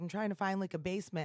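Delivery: ordinary delivery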